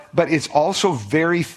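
ordinary delivery

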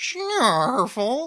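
high-pitched, squeaky cartoon creature noise. Showing an impression of a cartoon character: Snarf impression from Thundercats. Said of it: "From the Thundercats".

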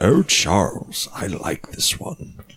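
said slowly while breathing out. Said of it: "a good Magneto line".

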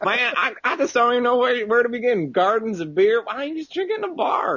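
very high, fake Southern country accent. In a group bit, playing someone who calls the others city folk, put-on southern accent. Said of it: "is that a southern accent?".

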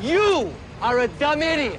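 mock yelling, acted-out shout. Retelling a movie scene where Gene Wilder's character yells at a truck driver: retelling a yell. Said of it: "he yells at the truck driver".

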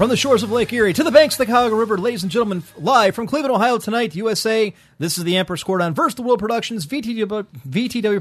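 rapid-fire, rushed announcer voice, no pauses. Speaker opens the broadcast, introducing the show: talking very fast. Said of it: "you talk so fast".

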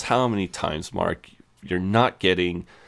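ordinary delivery

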